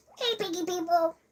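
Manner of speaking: very high, welcoming calling voice. Listing possible collabs, the speaker shows how Abby would greet viewers, Abby impression. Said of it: "a good impression of her".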